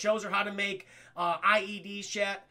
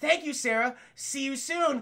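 caring, concerned motherly voice, pitched up; 6 semitones higher, 3 dB louder than usual. Retelling a movie scene where a killer mimics a mother: imitating a concerned mother's voice. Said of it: "fucking sounding like her mother, all concerned and shit".

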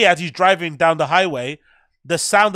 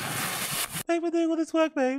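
mock little girl voice, much higher, quieter; 11 semitones higher, 9 dB quieter than usual. Asked to hear it one more time, doing a mock little girl voice. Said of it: "look at his little girl voice".

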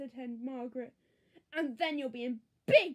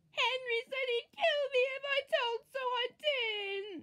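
slow, very high, drawn-out shriek; 10 semitones higher than usual. Peter, as henry lunges for his plate, shrieking. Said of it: "shrieked Peter".

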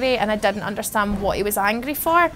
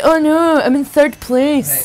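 scornful, loud, drawn-out taunting tone; 4 semitones higher, 8 dB louder than usual. Speaker mocks the listener who is shouting at them: mocking imitation of Ashley. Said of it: "And now you're like".

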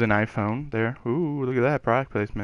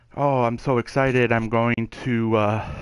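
ordinary talk

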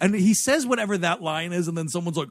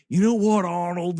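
put-on Australian accent slipping through; 3 dB louder than usual. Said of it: "really bad at covering up his Australian accent".

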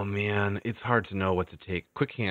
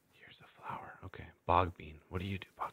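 whisper, much quieter; 3 semitones lower, 10 dB quieter than usual. Playing a game, looking at a flower to treat an injury: whispering. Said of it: "I'm whispering so that they don't hear me".

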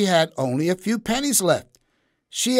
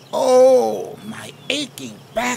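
very slow, rough, high creaky groan, oh drawn out; 5 semitones higher, 4 dB louder than usual. Woken by the sun after sleeping on a park bench, she is groaning. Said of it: "she groaned".

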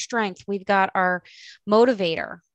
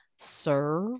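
dry sarcastic butler voice, quieter; 3 semitones lower, 7 dB quieter than usual. Voicing a mentor as a dry sarcastic butler: dry sarcastic Alfred voice. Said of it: "somebody who's really dry and sarcastic, like, like Alfred being like".

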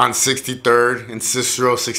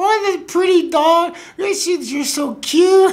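put-on very high, cooing baby-talk voice. Recalling talking to a growling dog in a baby voice. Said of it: "I kept on trying to talk to him like in a baby voice".

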